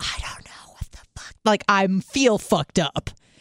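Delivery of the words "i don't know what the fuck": very soft, unvoiced whisper-yell under the breath. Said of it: "So then I start whisper yelling".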